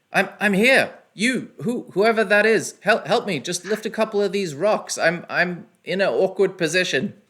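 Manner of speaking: muffled, high-pitched shout, stumbling over words. Narrating a scene at the rubble, voicing the man calling out: Orvex's muffled trapped voice. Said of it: "this guy muffled voice calling out to you".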